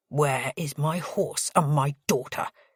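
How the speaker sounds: snapped, sharp, barked, demanding tone. Reading a story aloud, the father demands his horse and daughter: barking, a little quieter. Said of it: "he barks, but a little quieter".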